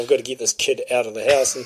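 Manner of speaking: ordinary talk, nothing marked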